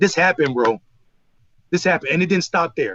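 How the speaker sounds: ordinary delivery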